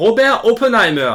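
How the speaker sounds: put-on German accent. Announcing a film about Oppenheimer, saying his name in put-on German accent. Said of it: "Pourquoi l'accent allemand".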